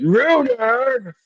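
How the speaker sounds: very high, stretched-out announcer-style voice. On a stream with chat, repeating one word in announcer voice. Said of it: "in my announcer voice".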